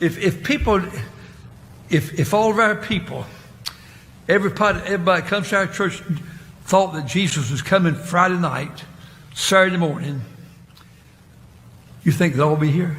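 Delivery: heavily slurred, words running together. Speaking to a church gathering, with slurred speech. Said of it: "long, fucking, slurred speech".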